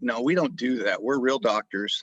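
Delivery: plain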